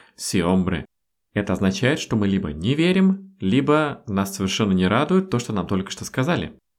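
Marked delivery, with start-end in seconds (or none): 0.2-0.9 level, unchanging, flat tune on sí, hombre. Lesson on the spanish phrase sí, hombre: flat intonation throughout. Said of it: "произносим ее вот в такой плоской интонации".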